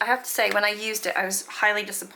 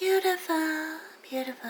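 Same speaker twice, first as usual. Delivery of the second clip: goofy, high, silly affected put-on voice; 7 semitones higher, 4 dB quieter than usual. Showing viewers items in a collection, in a put-on voice. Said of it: "I don't know why I'm doing that voice".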